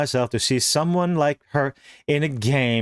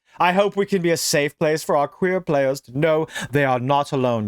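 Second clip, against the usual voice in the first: derisive, mocking, scornful parody voice. Speaker reads a quote aloud, quoting in a mocking voice. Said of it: "I'm making a mocking voice".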